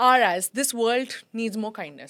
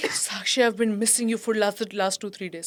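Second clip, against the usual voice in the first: put-on choked-up voice; 2 semitones lower than usual. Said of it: "choked up till here".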